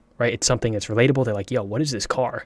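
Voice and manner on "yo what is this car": ordinary talk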